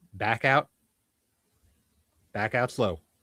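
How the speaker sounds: loud, stern voice. Voicing an armed stranger who comes up behind the players: armed stranger's warning. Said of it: "a voice comes up behind you and says".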